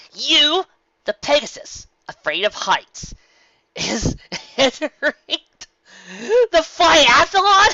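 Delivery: very high, loud, bursting with laughter. Reading a story aloud, a pony laughs at her friend: laughing while talking. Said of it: "exploded once more into another bout".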